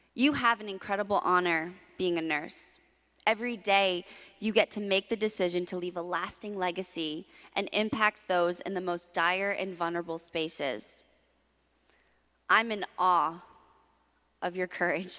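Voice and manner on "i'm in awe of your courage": fighting off tears, close to crying. Speaker addresses nurses, praising their courage, holding back tears. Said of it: "I'm trying not to cry".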